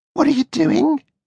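tiny, very high little voice. Narrating Pinocchio's story, an unseen speaker questions Pinocchio, small voice. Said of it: "a small voice said".

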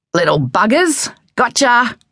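high shout. Dad, chasing the chickens in the coop, slams the cage door: shouted. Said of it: "he shouted".

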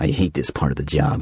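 mumbled under breath. Narrating Sherm's reply after Ed's question about the test, muttered. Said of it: "Sherm muttered".

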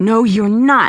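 ferocious, defiant, unyielding delivery. Pinned to the ground, she answers the man holding her, fierce. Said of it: "she said fiercely".

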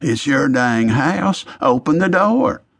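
half-voiced stage whisper. As the doorbell rings, the narrator tells Harold to open the door in a stage whisper. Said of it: "I said in a stage whisper".

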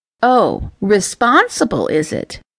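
playful, slow, sing-song teasing tone. Lily replies to Ember: teasing. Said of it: "Lily teased".

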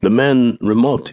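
plain reading voice

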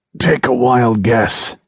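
croaking voice. Narrator, lying hurt, answers a woman asking if they are in pain, croaking. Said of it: "I croaked".

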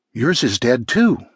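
plain reading voice

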